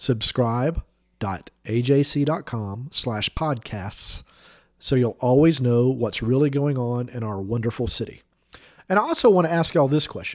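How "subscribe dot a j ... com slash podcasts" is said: slow, careful, deliberate spelling-out. Repeating a web address for listeners writing it down: said slower. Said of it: "I'm gonna say it slower".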